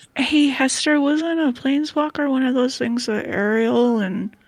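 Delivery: stage whisper, loud. Asking a companion a question aside, in a stage whisper. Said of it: "you're stage whispering so he can hear you".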